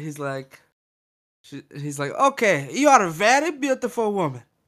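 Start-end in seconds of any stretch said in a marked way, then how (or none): 2.1-4.4 high put-on interviewer or reporter voice. Retelling a reporter interviewing a woman: imitating a reporter who sounds like Borat. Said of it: "He almost sounds like Borat".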